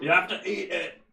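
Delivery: put-on British voice. Acting out someone in the past ordering a crow eaten: put-on British accent. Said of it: "They're all British in the past".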